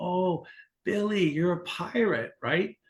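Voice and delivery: high, put-on, very elderly woman's voice. Telling a trick-or-treat joke, speaker quotes the woman at the door, imitating a very old woman. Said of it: "she's like really old".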